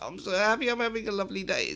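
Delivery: very high, overjoyed, really happy, swooping voice. Showing listeners how to say the line while keeping a sad face, really happy voice. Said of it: "in a really happy voice".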